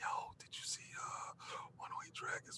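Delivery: hushed, soft, breathy whisper under the breath. Retelling a friend joining a late-night party: imitating someone whispering. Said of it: "He jumped on my party last night whispering".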